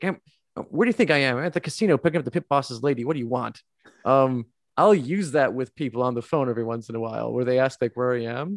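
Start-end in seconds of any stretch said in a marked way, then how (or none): 0.0-3.6 play-acted fed-up, annoyed, irritated tone. Quoting a movie character annoyed at being asked where he is: imitating an annoyed Donnie Ostricki. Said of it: "he's upset and just annoyed by this. He's like".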